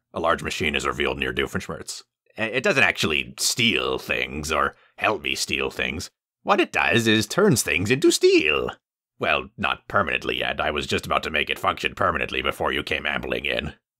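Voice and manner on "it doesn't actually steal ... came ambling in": grand, rambling, self-correcting, gloating villain voice. Doofenshmirtz in his lab speaks to the hovering captive cat, gloating. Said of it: "Interior [name]'s lab, that moment. [name] is gloating over [name], / [name] is gloating over [name], / I will become the strongest man in the tri-state area. I will become its new ruler, and everyone".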